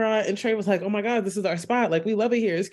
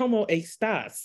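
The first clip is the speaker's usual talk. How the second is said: Spanish spoken with a bad American accent. Imitating a man's Duolingo-learned Spanish, in American-accented Spanish. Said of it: "it's very much American Spanish".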